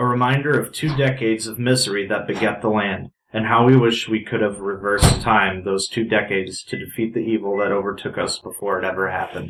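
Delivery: plain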